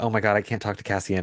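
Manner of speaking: mock very nervous, gushing speech. Describing an actress's scene, the speaker mimics her, imitating super nervous speech. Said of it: "like where she's like super nervous".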